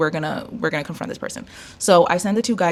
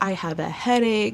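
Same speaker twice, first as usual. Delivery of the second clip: mock aggrieved grumbling; 3 semitones higher than usual. Telling how a lady answered the building super at her door, retelling a complaint. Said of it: "she's complaining".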